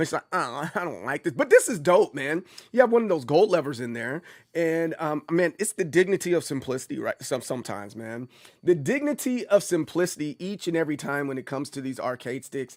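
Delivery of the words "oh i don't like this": weird, unimpressed, disapproving voice. Retelling his wife's complaint about an anime: imitating his wife. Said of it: "that's my impression of my wife".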